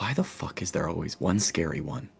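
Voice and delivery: muttering under breath, quiet aside. Voicing a character in a game scene: muttering under his breath. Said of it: "gonna kinda mutter under his breath".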